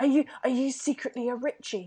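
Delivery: whispered voice. Leaning in to another character mid-scene to ask something, whispering. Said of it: "What are you whispering about?".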